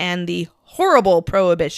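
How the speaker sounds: dry, ironic, tongue-in-cheek sarcastic delivery. Describing the nineteen twenties coming to the street: sarcastic. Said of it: "I say that with sarcasm".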